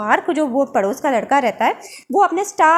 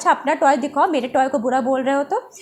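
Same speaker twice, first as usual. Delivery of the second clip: normal talking voice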